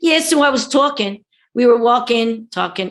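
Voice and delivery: Philadelphia accent, -ing cut to -in'. Showing how people talk without the G's: Philadelphia accent. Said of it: "they leave off the G's and I N G".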